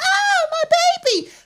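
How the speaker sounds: very high-pitched screaming wail. Imagining a mother after her buggy is hit, imitating a mother screaming. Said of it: "she'd be the one screaming".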